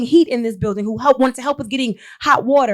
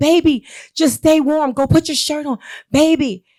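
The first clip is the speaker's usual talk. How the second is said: mock calling out, screamed as through a bullhorn; 3 semitones higher than usual. Retelling a mother calling to her jailed son: retelling a bullhorn scream. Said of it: "she's screaming out on the bullhorn".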